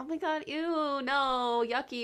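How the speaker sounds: goofy, drawn out. Explaining how the tone of voice changes the meaning, silly, playful tone. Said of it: "if I'm saying it like silly".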